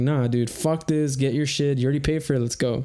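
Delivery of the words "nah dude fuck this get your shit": ordinary delivery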